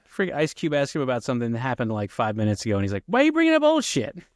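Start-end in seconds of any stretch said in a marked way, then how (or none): 3.0-4.0 very high, loud, whiny voice. Recalling a movie scene for the other speaker: Chris Tucker impression. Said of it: "Chris Tucker's like".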